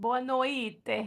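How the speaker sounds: "boa noite" said in put-on Italian accent. Speaker trying out a foreign goodnight phrase, in an Italian accent. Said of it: "I'm saying it with like an Italian accent".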